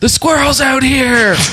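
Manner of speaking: acted, very high, carrying yell. Retelling yelling up to a girlfriend about a loose squirrel: imitating own yell. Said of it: "I yell up to".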